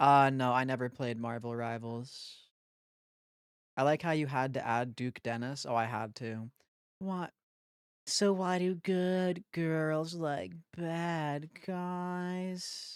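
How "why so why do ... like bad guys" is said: very slow, high-pitched put-on nerd voice. Reading out a chat question as a joke in a put-on nerd voice. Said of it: "I was just probably doing my nerd voice".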